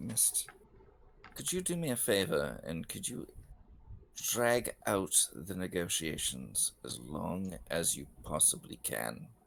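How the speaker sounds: very low, hushed, secretive whisper. Character leaning in to speak to a woman, whispering. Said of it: "I lean in and I whisper".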